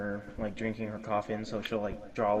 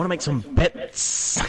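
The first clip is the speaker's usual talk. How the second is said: put-on impression voice, higher; 6 semitones higher, 8 dB louder than usual. Asked by the other speaker to imitate them, doing an impression of the other speaker. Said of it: "What's your impression of me".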